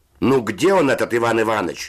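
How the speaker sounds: high-pitched shouting, loud call from a distance. A voice from the upper bunks calls out: shouting. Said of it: "закричал голос верхних нар".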